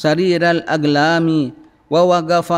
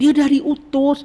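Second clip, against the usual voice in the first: very high, thrilled, eager excited tone; 9 semitones higher than usual. Showing how to read a line about the Prophet being sent, excited tone. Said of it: "kalau baca itu dengan suara excited".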